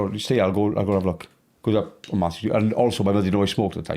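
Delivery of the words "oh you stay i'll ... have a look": plain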